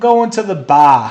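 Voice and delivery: loud, high attempted Boston accent. Admitting to being bad at it, giving an attempted Boston accent. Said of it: "I can't do a Boston accent. I can say like".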